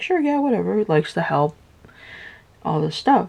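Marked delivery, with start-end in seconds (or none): 0.0-0.8 high, stubborn, careless brush-off. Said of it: "Stubborn, not really thinking".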